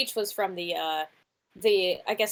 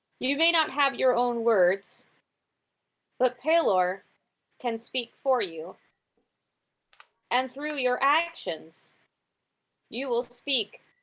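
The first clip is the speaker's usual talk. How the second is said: put-on woman's voice, higher; 4 semitones higher than usual. Voicing a bird that speaks in a woman's voice. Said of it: "a woman's voice comes out that is clearly not their own voice".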